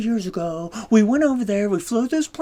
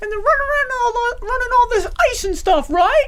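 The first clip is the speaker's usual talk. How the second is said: very high-pitched student voice. Retelling a student's question in class: imitating Jamie's high-pitched voice. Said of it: "going high-pitched with his voice whenever he asked questions".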